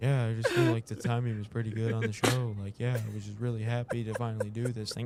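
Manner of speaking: mock sad, quiet voice. Retelling how Nate talked about the show, imitating Nate, quiet and sad. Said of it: "Nate was like quiet, like he looked sad".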